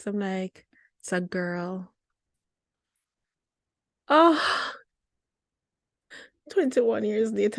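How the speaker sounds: weepy, tearful, emotional crying voice. Recalling a moment twenty-one years ago, the speaker is crying. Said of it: "and I'm still crying".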